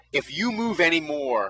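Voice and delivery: ordinary talk, nothing marked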